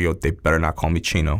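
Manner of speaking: ordinary talk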